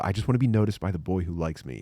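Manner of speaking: put-on hopeful teenage girl voice. Acting out a teenage girl hoping to be asked to prom: imitating a teenage girl. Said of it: "and you go".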